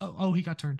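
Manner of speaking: put-on timid hushed voice. Mocking a race commentator's call at the crash: imitating Clint Bowyer sounding afraid to speak. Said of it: "he's afraid to wake his mom up".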